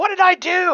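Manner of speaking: startled, very high, yelled-out call. Retelling a game where a wizard player called out to the speaker, imitating someone yelling out. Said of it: "they actually yelled out to me like".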